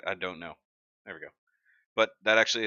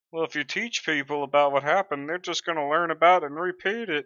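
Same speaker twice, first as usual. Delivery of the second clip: put-on dimwit voice, high and loud; 9 semitones higher, 5 dB louder than usual. Acting like somebody who's dumb in a bit about history, dumb person voice. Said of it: "that voice when I'm trying to act like somebody who's dumb".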